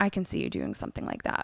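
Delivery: low, fast, cutting whisper. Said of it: "And Danny says".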